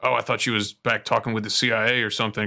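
plain

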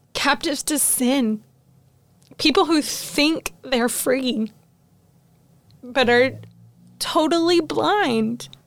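heartfelt, emotional, moved, preaching-style delivery. Speaking on a podcast about hard truths, getting emotional. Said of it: "I'm going to get emotional about this".

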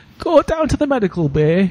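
put-on Portuguese-Irish-sounding accent. Repeating a quoted order in a put-on accent a listener calls Portuguese-Irish.

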